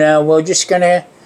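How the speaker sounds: normal talking voice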